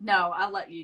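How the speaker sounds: ordinary delivery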